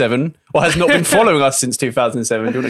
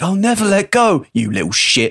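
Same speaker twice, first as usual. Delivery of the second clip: put-on East London accent, pitched up; 6 semitones higher than usual. Repeating the same line again in a new style, in an East London accent. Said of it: "like a guy from East London".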